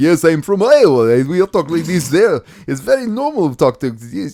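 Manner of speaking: put-on non-American foreign accent. Imitating an action star claiming to be from Iowa: Arnold Schwarzenegger impression. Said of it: "he's like Arnold Schwarzenegger".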